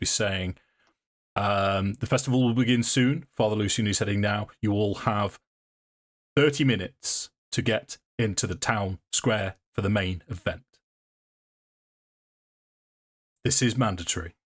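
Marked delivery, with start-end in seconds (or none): 1.9-14.3 commanding, authoritative guard voice calling out. Voicing a guard addressing people filing past: authoritative guard voice. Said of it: "in this authoritative voice".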